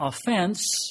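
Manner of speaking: offense with weight on second syllable -fense. Explaining dictionary pronunciations of offense, stress on second syllable of offense. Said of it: "when you emphasize the second syllable".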